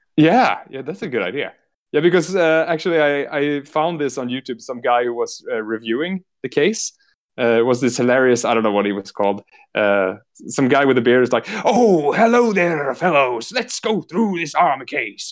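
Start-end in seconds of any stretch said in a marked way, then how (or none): 11.7-15.3 put-on crazy pirate voice, slow and high. Retelling a YouTube reviewer with a beard, imitating a pirate-like reviewer. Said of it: "some kind of pirate, crazy guy".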